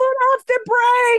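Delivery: acted-out high, shrill scream. Retelling being in his car at a racing class, retelling screaming at drivers ahead. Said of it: "I'm screaming at the people ahead of me".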